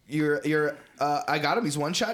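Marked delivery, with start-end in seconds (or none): 1.3-2.1 put-on young gamer voice, higher. Imitating how kids who play Fortnite talk: imitating kids who play Fortnite. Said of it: "the kids who play Fortnite now".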